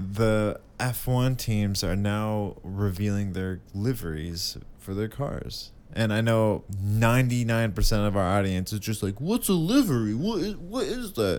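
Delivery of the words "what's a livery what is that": mocking put-on voice. Imitating the audience asking about F1 liveries, in a mocking put-on voice. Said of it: "I'm doing impressions".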